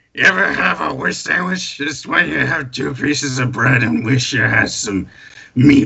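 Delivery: put-on spooky ghoul character voice. A ghoul performing for the crowd, in a ghoul voice. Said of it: "in a ghoul voice".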